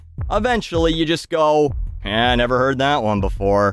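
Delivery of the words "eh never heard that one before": deadpan, really bored, flat monotone. Recalling hearing the same joke from everyone, mock-bored reply. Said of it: "sounding really bored".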